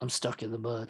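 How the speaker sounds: very quiet, low, hushed put-on movie voice. Showing his impression between cuts, Michael Madsen impression. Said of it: "my impression of uh Michael Madsen".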